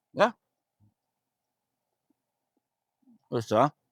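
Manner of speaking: talking with mouth full. Tasting plain sourdough bread while talking; talking with mouth full. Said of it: "I shouldn't be speaking with my mouth full".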